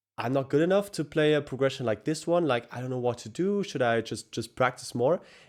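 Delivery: ordinary talk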